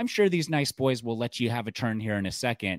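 mock mom voice, high and pointed. Retelling what a mom said at a Target demo machine: imitating a mom saying it really loud. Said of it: "you'd hear the mom say really loud".

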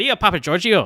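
put-on Scottish accent. Saying a friend's name the way another podcast host says it: Scottish accent like Joe Keegan. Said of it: "her name in Scottish".

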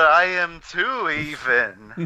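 very slow put-on cartoon voice, drawn out, sliding up and down. Joking with a co-host about an upcoming comic: Snagglepuss impression. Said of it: "your impression just puts "even" at the end".

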